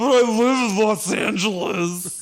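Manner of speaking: put-on slow, loud Belgian action-hero accent. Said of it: "what's with his accent?".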